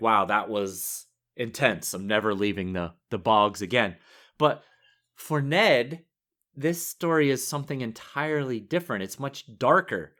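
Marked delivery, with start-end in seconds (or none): none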